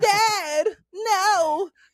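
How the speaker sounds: very high, whiny crying, "no" drawn out. Mocking a cartoon character's dubbed voice: whiny Gohan voice. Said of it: "that little voice".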